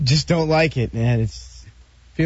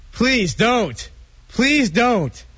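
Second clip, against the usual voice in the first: very high, slow, drawn-out yell; 10 semitones higher than usual. Begging the others not to go ahead with it: yelling. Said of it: "He's yelling".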